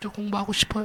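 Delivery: very quiet, hushed, tearful mock pleading. Retelling a student's plea to the school's representatives: retelling a tearful plea. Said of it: "막 울면서 얘기했대요".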